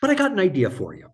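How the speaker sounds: butchered, bad Irish brogue, very high. Retelling what Frank told you about your pension, doing Frank's Irish accent. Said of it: "he had a wonderful Irish accent, which I will butcher".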